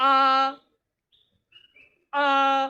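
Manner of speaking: a in first tone, held high and flat. Demonstrating how to read a vowel in the first tone. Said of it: "So the first tone".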